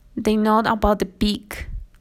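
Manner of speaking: usual speaking voice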